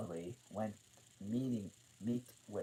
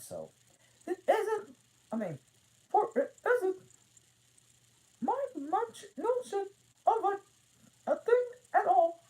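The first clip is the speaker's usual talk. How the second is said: very shrill, loud, swooping, very high cartoon mouse voice; 9 dB louder than usual. Reading Alice aloud, the speaker voices the Queen: Mickey Mouse voice. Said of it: "I'm just using my Mickey Mouse voice for the Queen".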